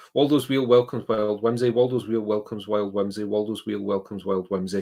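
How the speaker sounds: ordinary talk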